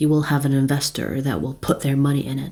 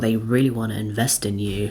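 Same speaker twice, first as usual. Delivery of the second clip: deep, grave, serious and weighty voice; 5 semitones lower than usual. Voicing a person who is quite serious: deep serious voice. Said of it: "I say it with my deep voice".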